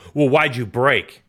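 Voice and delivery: sharp, barked retort. Retelling a rider answering back after a race: imitating Marvin barking back. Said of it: "when Marvin barked back, he was like".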